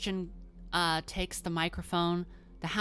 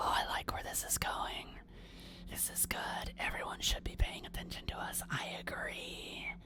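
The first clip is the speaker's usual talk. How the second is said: breathy, hushed, whispered creature voice. A game narrator voices the beast speaking to a player at the microphone, beast's whisper. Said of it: "the beast whispers to you while you're up there and goes".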